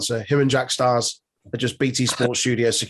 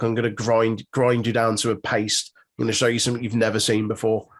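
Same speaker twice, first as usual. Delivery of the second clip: normal talking voice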